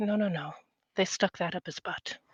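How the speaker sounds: quiet hushed aside. Voicing a character leaning closer to teammates at a party: said quietly. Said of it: "said quiet enough so only the immediate team hears it".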